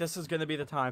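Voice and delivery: ordinary talk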